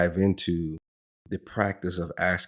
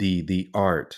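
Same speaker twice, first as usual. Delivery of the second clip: art said slowly with stress. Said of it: "and I stress the word art".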